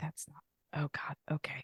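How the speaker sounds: imitated whisper. Recounting what they whispered after hearing a character speak, retelling a whisper. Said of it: "I just was whispering to the air".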